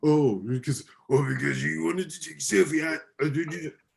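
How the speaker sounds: voice pushed until it strains. Retelling a wrestling segment, quoting Sami Zayn: imitating Sami Zayn's voice. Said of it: "I can't do that voice".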